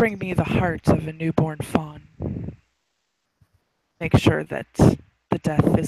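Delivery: spooky, eerie half-whisper, very close to the ear. A voice half-whispers a demand into a character's ear, eerie half-whisper. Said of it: "It it whispers like Sierra can almost can can think that it's whispering so in her ear".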